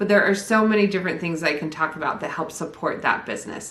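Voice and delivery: plain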